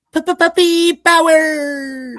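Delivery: very high, loud, squeaky cartoon puppy cry, stretched out. Showing he can still do the cartoon character's voice: Scrappy-Doo voice. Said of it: "I can still do his voice".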